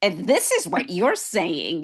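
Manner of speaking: swooping, sing-song, biting sarcasm heavy with irony. Retelling how they used to reply when emotional: imitating a sarcastic tone. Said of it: "you will go to that sarcasm and say".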